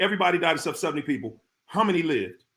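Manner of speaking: quick, fast, rattled-off, run-together delivery. Telling a trick plane-crash riddle to mislead listeners, spoken fast. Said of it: "But if I say it fast".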